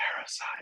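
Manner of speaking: breathy, very hushed whisper, barely voiced. Showing again how a vocal sample was recorded: whisper. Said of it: "so I whisper".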